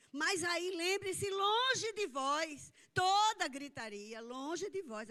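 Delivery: very loud, very slow, drawn-out shouting cry. Addressing listeners as brothers in Jesus' name, shouting. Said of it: "Agora eu estou gritando".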